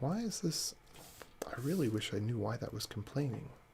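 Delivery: very soft, hushed, quiet voice.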